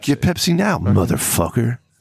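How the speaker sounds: put-on radio commercial announcer voice. Describing the local radio guy's gas-station Pepsi ads: imitating radio commercial announcer. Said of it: "heard the local radio guy doing commercials".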